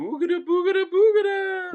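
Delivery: very high, spooky ghost wail.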